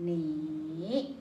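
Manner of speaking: 你 with dipping-rising third tone, low then up. Teaching Mandarin tones with a check-mark shape: dipping-rising third tone on 你. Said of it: "going to check mark, say it this way".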